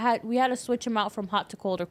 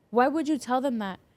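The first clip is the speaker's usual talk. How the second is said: mad, indignant, accusing angry tone; 2 semitones higher than usual. Retelling how an upset patient complained, imitating someone angry. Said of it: "and he's mad".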